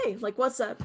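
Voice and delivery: normal talking voice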